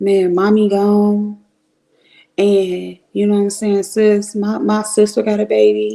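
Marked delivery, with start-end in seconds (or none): 0.0-1.4 put-on shaky, trembling voice, slower. Speaker acts out another man's words to him, imitating a shaking voice. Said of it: "I could hear his voice shake".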